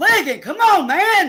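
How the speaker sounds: full-throated, loud, high-pitched exasperated yell. Calling the game and urging a player on, yelling. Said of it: "I'm sorry for yelling".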